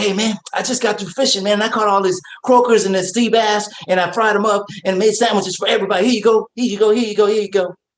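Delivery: rapid rambling chatter. Retelling what a childhood best friend would say, imitating Speedy talking fast. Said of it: "He also talks fast".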